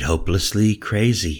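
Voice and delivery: ordinary talk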